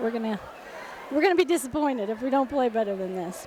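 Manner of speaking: ordinary delivery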